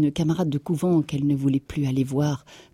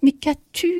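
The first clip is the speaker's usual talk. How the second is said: stammering, pitched very high; 13 semitones higher than usual. A stunned husband, seeing his wife in tears, stammers a question to her. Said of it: "Il bégaya".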